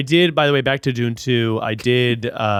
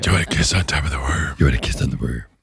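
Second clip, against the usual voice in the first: put-on demon voice, lower; 9 semitones lower than usual. Retelling a movie character's seduction lines in a demon voice. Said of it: "it's his, like, demon voice".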